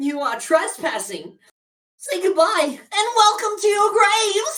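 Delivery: shrill, blaring, very loud, very high skull voice. Voicing a floating skull that warns trespassers: floating skull voice. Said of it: "A voice comes from the floating skull".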